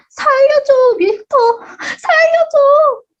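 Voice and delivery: very high, pleading, all-out shriek at top of lungs. Reading a picture book aloud as a demonstration: shouting at full volume. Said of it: "있는 힘껏 큰 소리로 외쳤지".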